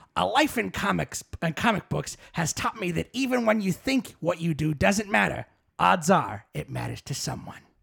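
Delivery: rough, creaky character voice. Reading quotes aloud for a guessing game: Stan Lee voice. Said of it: "read them all in the Stan Lee voice".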